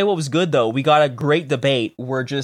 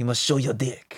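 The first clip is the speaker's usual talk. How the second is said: soft, quiet, laid-on bad French accent; 2 semitones lower, 7 dB quieter than usual. Retelling a jab at the Liberal Party leader in a bad Blanchet accent impression. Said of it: "What accent are you doing?".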